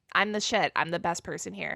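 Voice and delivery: ordinary talk, nothing marked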